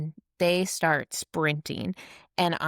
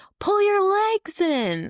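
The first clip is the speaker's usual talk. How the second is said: very high, drawn-out, shouted yell; 4 dB louder than usual. Retelling warning the other a p p near the wall: retelling own yell. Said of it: "I'm yelling at the other A P P".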